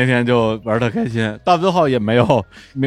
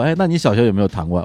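ordinary talk, nothing marked

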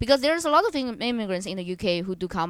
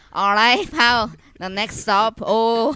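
loud, slow put-on Glaswegian announcer accent; 3 semitones higher, 7 dB louder than usual. Imagining a bus stop announcement done in Glasgow: put-on Glaswegian accent. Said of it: "public announcement that is in Glaswegian accent".

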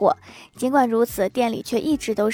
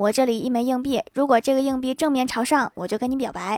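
plain

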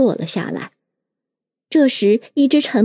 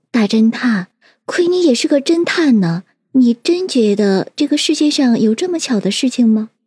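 usual speaking voice

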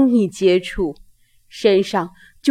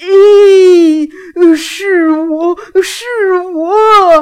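voice brimming with wild joy, raised and drawn out; 8 semitones higher, 6 dB louder than usual. Reading a story aloud, the mountain recognises an old friend: voice full of wild joy. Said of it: "山的声音充满了狂喜".

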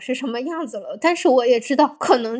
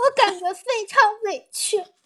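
very high-pitched, sobbing and giggling at once; 9 semitones higher than usual. Recounting being told that dating her hurt him, crying while laughing. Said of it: "我虽然在哭，但是我也觉得好好笑".

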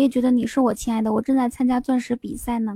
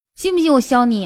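put-on northeastern Chinese Dongbei accent. Two speakers trade lines showing off their Northeastern dialect, Northeastern Chinese accent. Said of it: "我东北话说说起来真的是".

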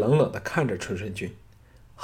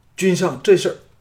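stunned, shocked cry, high and loud; 8 semitones higher, 7 dB louder than usual. A man looks up at his sovereign and cries out, crying out in shock. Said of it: "愕然抬头叫道".

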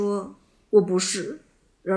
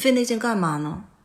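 mock sneering, mocking tone; 2 semitones higher than usual. Quoting a teacher's remark on a useless effort: imitating a mocking tone. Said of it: "语气中还带着嘲讽说".

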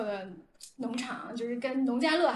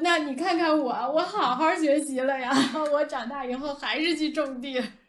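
laughing, jokey tone with raised voice; 2 semitones higher, 7 dB louder than usual. Retelling what a business partner said back, laughing, retelling a laughing reply. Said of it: "笑着说".

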